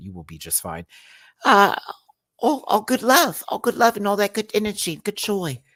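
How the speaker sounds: put-on British and Australian blended accent, sing-song. Retelling what Hannah said, in a mixed British and Australian accent. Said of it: "I'm mixing a British and Australian accent".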